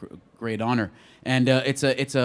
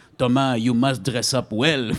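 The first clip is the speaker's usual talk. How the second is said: fake French accent, played for laughs; 4 dB louder than usual. Retelling a phone call to Thomas before a shoot, put-on French accent. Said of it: "I'll take a French accent just so it's funnier".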